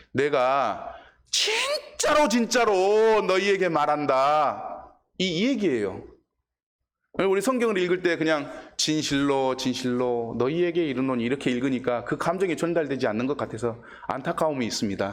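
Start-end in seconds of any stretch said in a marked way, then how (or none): 0.2-5.0 Jeolla Korean dialect. Speaker rephrasing a Bible verse in Jeolla Korean dialect. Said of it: "전라도 사투리로 얘기하면".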